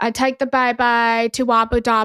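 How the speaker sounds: put-on Birmingham accent. Retelling how he repeated a phrase, recreating the Peaky Blinders accent. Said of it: "he was like recreating the accent".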